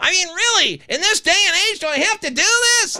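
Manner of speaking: very high-pitched, shrill, ranting yell. Podcast host asking the audience a rhetorical question, in high-pitched yelling. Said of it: "yell about it like this in a high-pitched voice".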